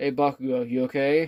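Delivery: ordinary delivery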